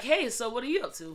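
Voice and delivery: put-on American accent. Explaining that a teenage son talks like American TV, the parent imitates his American accent. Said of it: "son just talks like that, like legit".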